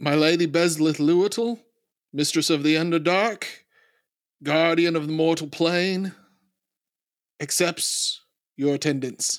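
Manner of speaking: high, ceremonial herald-style proclaiming voice. In a tabletop roleplaying podcast, a character announcing a lady's arrival, loud proclamation. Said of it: "say loudly".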